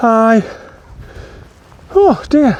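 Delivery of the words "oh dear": a high-pitched voice, panting and out of breath. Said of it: "out of breath here".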